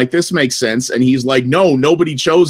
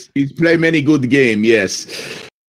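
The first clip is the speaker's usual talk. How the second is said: put-on, poorly done Russian accent. Answering a question about which games he has played, in a put-on Russian accent. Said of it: "your Russian accent".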